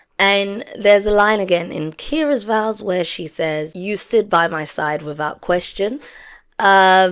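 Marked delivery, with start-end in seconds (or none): none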